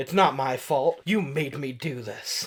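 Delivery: normal talking voice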